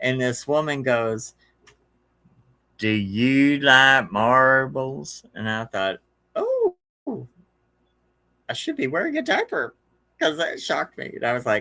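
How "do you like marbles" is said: psychic medium voice, every word drawn out very slowly. Retelling a woman's question that sounded just like Tangina's voice. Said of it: "it was that voice".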